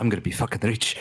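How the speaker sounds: hushed, secretive whisper. Voicing a character who whispers a secret to Zeke: whispering in character. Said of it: "He's gonna whisper to Zeke".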